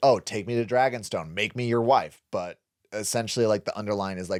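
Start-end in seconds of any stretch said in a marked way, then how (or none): none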